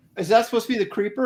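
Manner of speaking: quick, high, snide, dismissive and sarcastic tone. Retelling a man questioning the speaker's creeper, imitating a sarcastic question. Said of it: "he's just kind of sarcastically shredding me".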